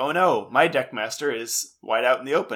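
ordinary delivery

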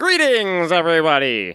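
put-on animated character voice with wide swooping pitch. Greeting everybody as the podcast guests are introduced: Ninjor voice. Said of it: "Was that your Ninjor?".

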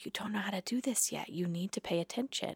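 speaking very softly. Retelling walking up close to a girl to correct her meditating: speaking real quiet. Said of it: "walked up real quiet in her face and was like".

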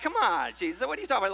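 put-on heavy, dripping sarcasm in New York accent. Acting out the disciples answering Jesus: imitating sarcastic New Yorker. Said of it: "really laced with some sarcasm".

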